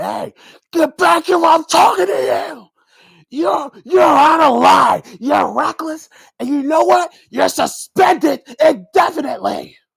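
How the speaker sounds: very high-pitched, loud, squeaky authority voice. Retelling a wrestling segment, imitating Adam Pearce. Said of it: "And Pierce like".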